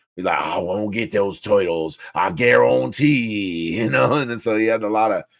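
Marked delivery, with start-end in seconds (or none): 0.3-3.7 put-on thick Cajun accent, very slow. Recalling a favourite cartoon villain, quoting him in a Leatherhead thick Cajun accent. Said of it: "that thick Cajun accent".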